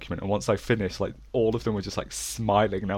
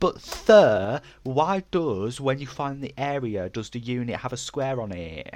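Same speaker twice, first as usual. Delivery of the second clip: put-on slow, childish kid voice; 4 semitones higher than usual. Retelling their own question to sir, put-on childish voice. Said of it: "talking like this, like, really childishly".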